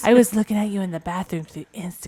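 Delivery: very loud, put-on sexy voice. Admitting to watching the others online, after offering: put-on sexy voice. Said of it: "Do you want my sexy voice when I say?".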